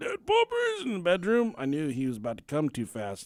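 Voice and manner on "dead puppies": play-acted, very high-pitched yelling. Retelling hearing a dad yell through a wall: imitating dad yelling. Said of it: "I hear my dad yelling".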